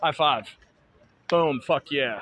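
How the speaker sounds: voice projected outward, carrying. Demonstrating a high five drill, projected voice. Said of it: "you really need to project your voice".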